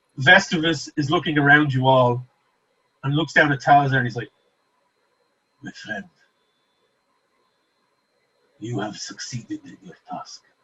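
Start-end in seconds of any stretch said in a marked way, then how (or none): 5.6-10.4 very quiet, unsettling, creepy breathy whisper. Voicing a character who greets the party: awful creepy voice. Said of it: "he's got an awful creepy voice".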